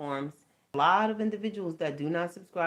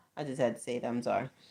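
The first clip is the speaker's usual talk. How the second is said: ordinary delivery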